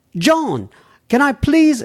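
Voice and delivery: clumsy bad English accent, very high. Reading a listener's email aloud, starting in a bad english accent. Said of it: "I started to do a bad English accent".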